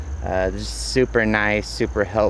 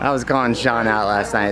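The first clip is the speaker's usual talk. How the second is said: ordinary talk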